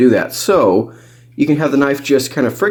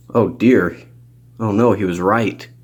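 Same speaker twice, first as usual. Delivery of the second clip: normal talking voice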